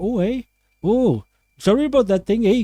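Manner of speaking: high, clumsy, ultra-polite put-on Canadian accent. Imitating someone's very nice mum: put-on Canadian accent. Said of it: "I'm not very good at Canadian accents".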